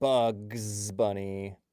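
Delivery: bugs stressed and said slowly. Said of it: "Emphasis on the bugs".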